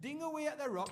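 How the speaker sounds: put-on Geordie accent. Explaining how to mine ore in answer to a question: geordie accent. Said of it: "when I'm doing that accent".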